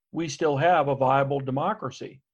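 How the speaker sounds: ordinary delivery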